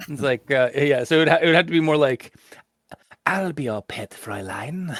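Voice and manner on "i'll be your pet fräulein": hushed, hissy, sibilant Austrian accent. Showing the other speaker a better version of the voice: high-pitched hissy austrian voice. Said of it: "high pitch and a little bit more, like, hissy or hush".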